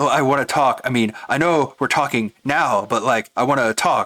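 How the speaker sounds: stammering, stuttering, stumbling, halting voice. Retelling a game scene, mocking a character's stammering: mocking stammering Peter voice. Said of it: "he's just stuttering and stammering like a low I Q idiot".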